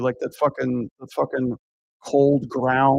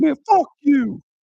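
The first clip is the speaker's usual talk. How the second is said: very high, angry, mad tone; 13 semitones higher, 4 dB louder than usual. Retelling a heckler's comeback, the speaker acts out his reply: imitating an angry heckler. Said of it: "He got all mad".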